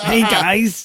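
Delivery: put-on New York accent, played as a bit. Greeting the others after being introduced, put-on new york accent. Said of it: "I'm doing my rug boy".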